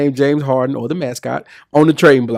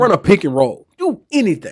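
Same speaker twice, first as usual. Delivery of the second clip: put-on urging shout; 6 semitones higher than usual. Recalling watching the game's final seconds, retelling yelling at the tv. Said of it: "I remember screaming at the T V like".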